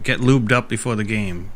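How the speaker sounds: ordinary delivery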